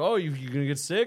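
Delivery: acted-out needling, teasing, mocking tone. Retelling how a man on a carnival ride teased her: imitating someone mocking. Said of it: "making fun of".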